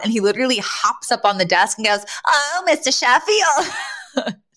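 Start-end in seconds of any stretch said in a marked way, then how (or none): 2.3-4.3 put-on American accent with swooping pitch. Retelling a character hopping on a desk to address a man, doing a Fran impression. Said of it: "Doing a Fran impression".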